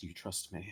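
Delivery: acted whispered words. Voicing a character who leans toward Momo: whispering in character. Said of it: "and just kinda whispers to him".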